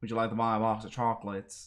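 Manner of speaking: exaggerated, put-on American southern accent. Showing how your southern accent used to end up sounding, use a put-on southern accent. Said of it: "start to sound a little bit like".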